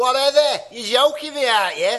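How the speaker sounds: put-on Liverpool accent. Showing the others how their liverpool impression has improved: liverpool accent attempt. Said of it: "I'm trying to improve my Liverpool now".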